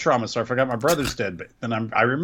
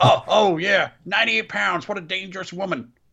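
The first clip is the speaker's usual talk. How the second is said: raised-pitch wrestling commentator call; 8 semitones higher than usual. Retelling a commentator's call of a small wrestler's win: imitating Jim Ross. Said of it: "Jim Ross is like".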